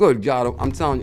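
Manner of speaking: loud, full-throated yelling. Reacting to news while talking to viewers, yelling. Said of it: "my apologies about yelling like that".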